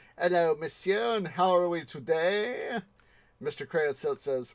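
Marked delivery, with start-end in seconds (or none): 0.2-2.8 bad, put-on, posh French accent. Retelling the maître d's greeting, in a bad french accent. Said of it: "I know I'm not doing a good French accent".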